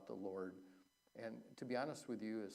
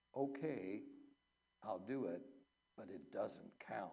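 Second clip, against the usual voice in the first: put-on whisper. Retelling the priest's reply while giving out communion, imitating a priest whispering. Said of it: "he leaned over and whispered in my ear".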